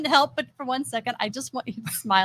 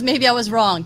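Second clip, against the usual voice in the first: ordinary delivery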